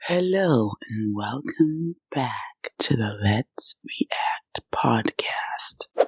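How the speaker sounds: mock soft ASMR podcast-intro style delivery. Opening the podcast episode, ASMR-style voice. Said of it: "I'm gonna do some A S M R".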